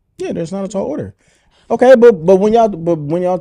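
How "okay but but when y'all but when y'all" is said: raising voice, getting higher and louder. Interrupting to push back in a group debate, getting loud. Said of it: "I'm sorry, I'm getting loud".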